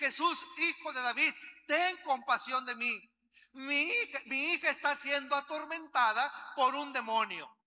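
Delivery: ordinary talk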